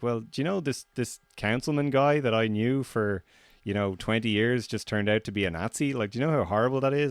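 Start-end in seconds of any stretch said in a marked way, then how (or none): none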